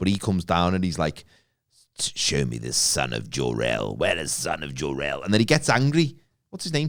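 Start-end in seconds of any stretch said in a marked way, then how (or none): 2.0-5.2 very low, very slow villainous voice. Retelling a film scene where the villain arrives: General Zod space villain voice. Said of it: "talks like you'd expect a villain from outer space".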